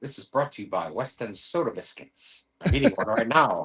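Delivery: put-on cartoon dad voice. Doing a bit as a sponsor announcement: Peter Griffin voice. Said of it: "we gotta do the Peter Griffin".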